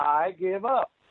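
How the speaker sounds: mock, all-out, yelled scream. Retelling giving up to the referee during an arm bar: retelling a scream. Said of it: "I start screaming".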